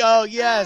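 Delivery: high, smug, self-satisfied voice. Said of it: "your smug, like".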